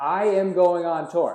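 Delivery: very loud, drawn-out, full-conviction voice. Speaking a plan into existence, said like you mean it. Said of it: "Gotta say it like you mean it".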